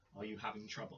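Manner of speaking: very soft, low, hushed half-whisper. Sidling up to the cleric while another is talking: low half-whisper. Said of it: "whisper in a low voice".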